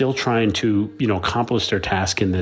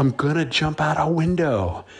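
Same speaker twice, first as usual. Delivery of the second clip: play-acted, sudden, high-pitched screamed outburst; 6 semitones higher than usual. Retelling a story about a stunt performer screaming: retelling a scream. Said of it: "Tom just screams".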